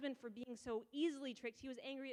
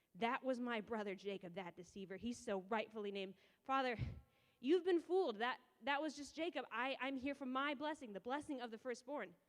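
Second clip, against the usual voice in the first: ordinary delivery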